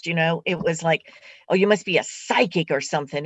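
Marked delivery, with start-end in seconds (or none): 1.5-3.3 put-on disdainful, contemptuous tone. Recalling how a mother first said the word psychic: imitating mother's disdainful tone. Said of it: "It was a filthy, filthy term".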